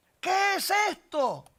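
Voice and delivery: high-pitched, shouted.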